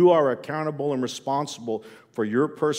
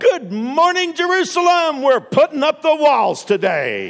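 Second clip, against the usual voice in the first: loud, swooping, fired-up, belted-out voice; 9 dB louder than usual. Imagining a zealous wall builder in the voice of Robin Williams. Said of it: "I sort of hear the voice of Robin Williams".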